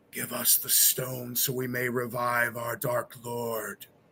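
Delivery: eerie, otherworldly, soft, hushed ghostly voice. Game master voicing a ghost speaking to the players in the chamber: ghostly voice. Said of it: "You hear one of their ghostly voices say".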